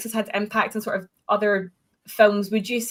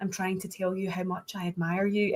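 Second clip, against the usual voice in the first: put-on calm voice, quieter; 3 semitones lower, 7 dB quieter than usual. Describing an actor's final scenes, imitating Kevin Spacey's unnerving calm. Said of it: "in that completely fucking unnerving, you know, calm voice".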